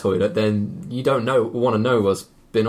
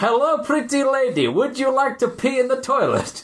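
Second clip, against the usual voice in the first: very high-pitched fake foreign European accent; 13 semitones higher than usual. Retelling a drunk friend approaching his ex-girlfriend: faux European accent. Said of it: "in some faux foreign European accent went".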